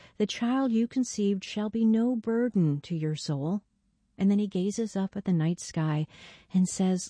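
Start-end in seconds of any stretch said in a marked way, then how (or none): none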